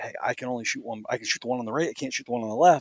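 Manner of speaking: soft, hushed half-whisper. Retelling what he half-whispered to his hunting partner with birds close by, half-whispering. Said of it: "I'm whispering to him and I'm like".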